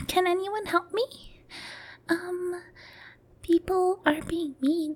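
very high, put-on sweet little voice. Imitating how girls online ask for help: put-on sweet little voice. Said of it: "put on that sweet little voice".

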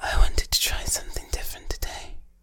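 hushed ASMR whisper throughout. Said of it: "I'm just going to whisper like this".

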